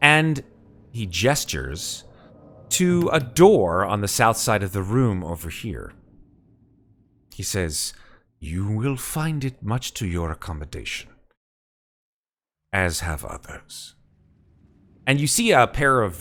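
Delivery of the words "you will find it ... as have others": smooth, musical creature voice, said quieter. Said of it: "This sort of mellifluous voice issues from this creature".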